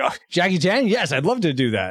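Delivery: play-acted thrilled, eager, all-excited reply. Telling a story, acting out a man offered a fight scene, retelling him all excited. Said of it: "he's all excited about going out".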